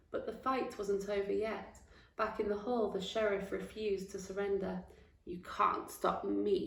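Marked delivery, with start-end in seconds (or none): 5.3-6.7 growling, villainous delivery. A narrator reading the sheriff refusing to surrender, growled. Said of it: "he growled".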